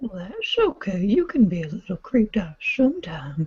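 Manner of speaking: high, eerie, skin-crawling creepy voice. Performer answering the others' reactions, in a creepy voice. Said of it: "it like legitimately made me shiver".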